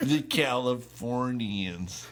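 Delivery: stretched-out slow put-on voice. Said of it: "the Californians was a s-, S N L skit".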